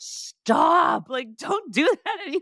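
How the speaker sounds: high-pitched, loud, shouted scolding delivery. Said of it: "call time and be like".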